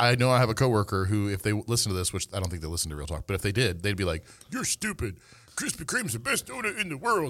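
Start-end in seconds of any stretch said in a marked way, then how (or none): 4.5-7.3 very high, squeaky put-on little old man voice. Imitating a coworker who disagrees about donuts: imitating Jesse. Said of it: "that's a perfect [name] impression there".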